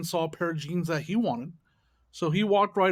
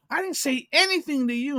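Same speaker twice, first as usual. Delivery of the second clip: mock, pitched-up, loud yell; 9 semitones higher, 3 dB louder than usual. Retelling what a girl yelled out for everybody to hear: imitating someone yelling. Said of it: "she just yells out for the".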